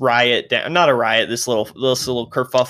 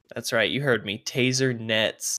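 usual speaking voice

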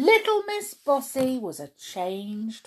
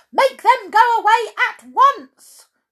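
shrill, very high, very loud bossy cry; 13 semitones higher, 10 dB louder than usual. A girl who cannot take off her boots answers another character: crying out. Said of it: "cried Miss Bossy, stamping her foot".

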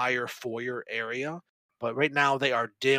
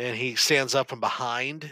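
usual speaking voice

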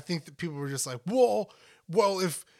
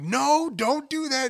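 stern, loud, high, drawn-out yell; 9 semitones higher, 5 dB louder than usual. Speaker shows how they yell at Max, imitating a yell. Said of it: "I yell it whenever I'm like yelling at Max".

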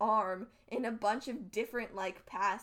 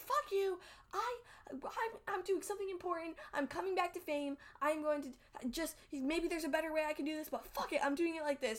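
high, furious, angry ranting outburst; 7 semitones higher than usual. Retelling a character's outburst at a passive-aggressive prompt: imitating an angry outburst. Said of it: "Vriska is very mad".

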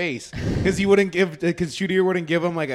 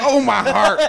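hurt, dramatic cry of dismay, high and loud; 6 semitones higher, 7 dB louder than usual. Teasing another speaker by repeating their line: Avery impression. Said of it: "like you're doing your Avery impression".

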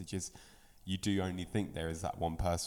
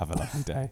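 gentle, calming, soothing tone, lightly lifted; 7 semitones higher than usual. Asked for any last words, the guest signs off in soothing tones. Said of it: "my soothing tones there".

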